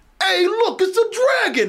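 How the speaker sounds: put-on very high, slow, drawn-out Brooklyn accent laid on. Showing how the character could have reacted: stereotype Brooklyn accent as Jacob Kowalski. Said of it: "he could have been reacting to things like".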